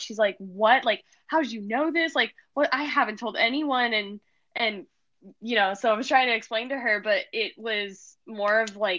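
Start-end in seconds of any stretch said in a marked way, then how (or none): 0.4-3.9 mock stunned, freaked-out, disbelieving tumbling outburst. Retelling another person's reaction: imitating someone freaking out. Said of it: "she just starts freaking out".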